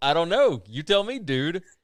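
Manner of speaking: loud, mock sarcastic tone. Retelling how he answered a man who walked into the wrong house, retelling a sarcastic reply. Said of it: "And sarcastically".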